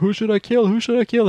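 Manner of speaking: acted-out screaming, pitched very high. Recounting a movie plot, acting out a female character's line: retelling her screaming. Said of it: "she's screaming like".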